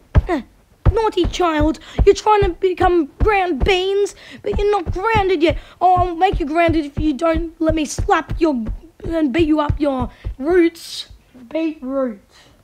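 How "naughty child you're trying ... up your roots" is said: furious, angry scolding tone. Acting out parents beating up baby roots: angry parent scolding a child. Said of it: "Like this".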